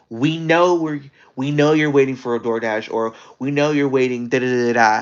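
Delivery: rude, nasty voice full of attitude. Retelling what a lady said to a woman waiting for food, imitating a very nasty voice. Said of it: "like in a very nasty voice".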